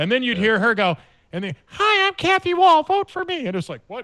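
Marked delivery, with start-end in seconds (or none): 1.6-3.5 very high, loud, squeaky, slow, drawn-out voice. Act out the candidate at the end of her commercial, in a high-pitched Kathy Wall impression. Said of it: "high pitched voice as though she just sucked down a balloon full".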